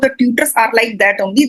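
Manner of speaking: ordinary delivery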